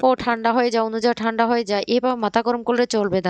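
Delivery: ordinary delivery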